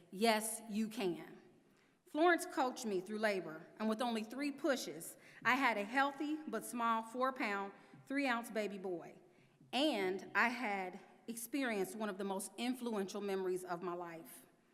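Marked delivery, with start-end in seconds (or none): 0.1-1.2 play-acted firm, commanding, authoritative voice. Retelling how her labor coach answered her fear, imitating an authoritative voice. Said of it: "in her authoritative voice".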